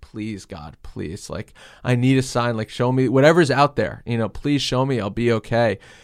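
put-on hysterical crying and sobbing. Speaker recalls praying while looking out the window, retelling a hysterically crying plea. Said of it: "hysterically crying".

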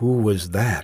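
whispering anxiously. After a knock and footsteps outside, he asks her, in an anxious whisper. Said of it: "he whispered, unable to keep the anxiety from his voice".

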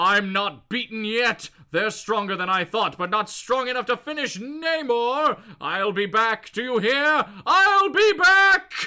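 shout that builds in loudness, climbing in pitch. Retelling a comic scene where Namor yells from the ocean, retelling Namor's yell. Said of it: "Namor yells out".

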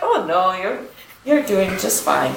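convincing, put-on British accent. Retelling what the guy sitting next to him kept saying, in a british accent. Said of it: "That is a great British accent".

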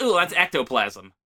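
normal talking voice

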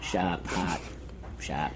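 hushed, whispered Boston accent. Trying out a couple of words in a Boston accent. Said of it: "with like a Boston style accent".

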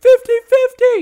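shrill, piercing, high, full-throated scream. Imagining a game character going down in battle, imitating Clovis screaming. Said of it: "he's screaming".

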